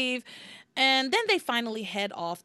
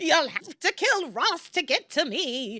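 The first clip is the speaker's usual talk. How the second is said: put-on high, doddering, rickety old buccaneer voice; 5 semitones higher than usual. Retelling a story where a character pulls someone in front of her, rickety old pirate voice. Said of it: "I'm doing it like a rickety old pirate".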